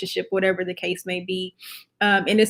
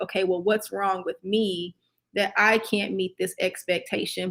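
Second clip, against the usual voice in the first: ordinary talk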